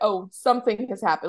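normal talking voice

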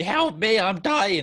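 put-on very slow, high, loud, dragged-out scream. Retelling a fellow player screaming in the corner during a game, retelling a scream for help. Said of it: "she's screaming in the corner".

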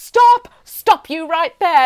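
loud, all-out screaming. Retelling a woman at the petrol station screaming at Mum: imitating someone screaming.

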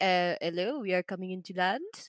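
imitated French accent. Describing pilots radioing air traffic controllers, imitating a French pilot: put-on French accent. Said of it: "I nailed the accent".

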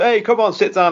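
very high, terrible put-on Italian mobster accent. Asked about a movie sequence, the speaker mocks the gangsters in a mock italian gangster accent. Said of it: "I thought this guy was Italian".

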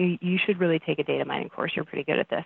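ordinary delivery

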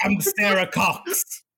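put-on accent from northern England. Joking to the others that they are sarah cox: put-on northern accent. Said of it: "Putting on a northern accent".

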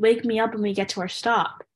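ordinary delivery

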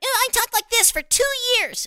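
put-on very high-pitched cartoon kid voice. Voice actor asked whether that is really the voice, Mikey Monroe cartoon kid voice. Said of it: "is that really the voice?".

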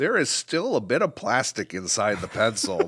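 put-on, sing-song reviewer voice. Reading out a reviewer's complaint about a pencil: Bryant impression with accent. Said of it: "Your, uh, impression of Bryant is spot on".

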